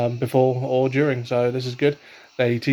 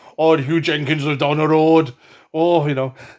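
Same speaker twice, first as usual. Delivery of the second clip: put-on manly-sounding Welsh accent; 4 semitones higher, 5 dB louder than usual. Demonstrating the only Welsh accent the speaker can manage, a manly Welsh accent. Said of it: "if I try and do a Welsh accent".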